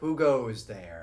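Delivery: ominous eerie voice. Voicing a figure who speaks to the players from the door: dark, eerie voice. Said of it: "a dark, eerie voice speaks to you".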